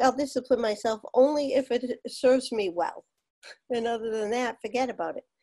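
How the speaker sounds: plain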